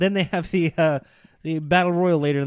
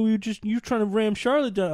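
pitched-up, griping critic voice; 5 semitones higher than usual. Retelling what internet critics say about a wrestler: imitating internet critics' voice. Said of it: "why am I doing the voice now?".

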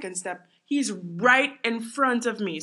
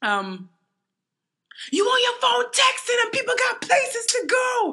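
mock very high, irate, rising angry yell; 4 dB louder than usual. Retelling a man who came up behind the speaker yelling: retelling a man's angry yell. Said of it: "Then I hear him again".

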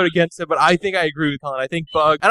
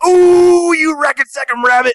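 high-pitched, slow hollering; 11 semitones higher, 6 dB louder than usual. Comparing Foghorn and Yosemite Sam, breaking into a Yosemite Sam voice. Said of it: "I just got to keep doing the voice".

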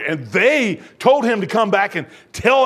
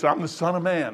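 normal talking voice

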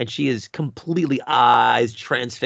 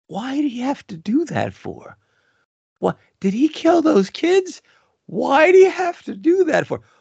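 put-on high, worried, concerned little boy's voice; 14 semitones higher, 4 dB louder than usual. Recreating the speaker's son questioning a movie scene, imitating his concerned voice. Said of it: "With the the concern in his voice".

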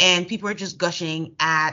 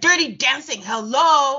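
high-pitched, pitched-up, exasperated shriek; 8 semitones higher, 3 dB louder than usual. Retelling how Anthony reacted to a blank stare; imitating Anthony screaming. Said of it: "he has to scream".

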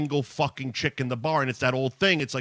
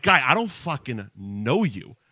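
put-on slightly loud delivery; 3 dB louder than usual. Retelling what he said to a guy talking to him: retelling a slightly loud retort. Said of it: "So I'm already a little loud".

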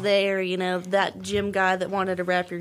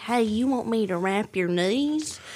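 put-on very strong, laid-on country accent. Retelling how Matt came through the racks with an offer, as a very country Matt impression. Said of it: "Why do you all make me sound so country?".

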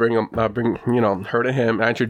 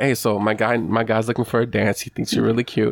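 plain

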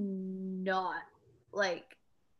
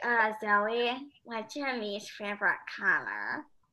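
imitated female voice. Retelling how a woman on the couch asks a question, imitating her voice. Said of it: "I'll ask you this question in her voice".

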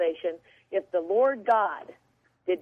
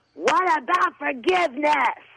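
put-on high screaming at the top of lungs; 6 semitones higher, 4 dB louder than usual. Retelling a woman in a crowd screaming a question: imitating a woman screaming at top of lungs. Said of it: "screaming at the top of her lungs".

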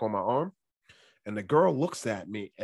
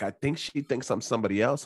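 normal talking voice

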